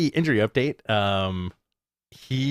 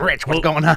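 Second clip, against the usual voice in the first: mock weird phone voice, louder; 2 semitones higher, 4 dB louder than usual. Retelling a phone call, imitating Tony Khan's weird phone voice. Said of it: "he had a weird phone voice".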